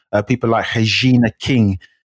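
Brazilian-style pronunciation. Listing award winners, the speaker says a name with a brazilian accent. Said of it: "I said it like a Brazilian".

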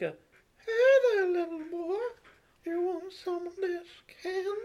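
very high-pitched, creepy voice. Trying out Herbert's voice for the first time, in a Herbert voice. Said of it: "Herbert would be like".

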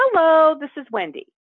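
sing-song, lilting delivery. Showing exactly how she answers the phone, with a lilting phone greeting. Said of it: "with a lilt in my voice".

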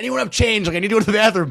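loud, high-pitched, far-carrying holler. Speaker retells needing coins for a bathroom machine in italy, retelling own screaming. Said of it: "I'm an American screaming at Italians".

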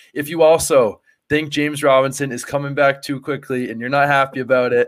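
sarcastic tone breaking into a laugh. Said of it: "I'm being sarcastic".

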